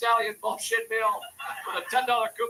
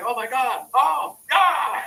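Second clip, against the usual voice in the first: loud, over-the-moon excited, thrilled gush; 6 dB louder than usual. Telling about gift cards, the speaker acts out the recipient's reaction: imitating someone thrilled. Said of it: "She was thrilled".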